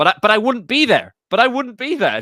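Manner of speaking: shrill, loud, high, swooping insistent voice. Retelling a debate clip: bad Jordan Peterson impression. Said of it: "that wasn't a very good Jordan Peterson impression".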